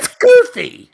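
very high-pitched, loud, animated outburst. Calling a supposedly dark, broody voice goofy, really high-pitched voice. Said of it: "your voice got really high pitched there".

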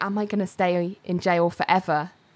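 ordinary delivery

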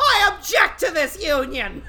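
high, screechy cassowary-like bird cry. Interrupting a wedding as the cassowary, screeching. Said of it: "the cassowary screeches".

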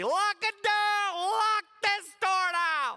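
very slow, very high, drawn-out shouting. Retelling a lost child in a mall, yelling at security: imitating someone yelling. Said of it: "I was yelling at security".

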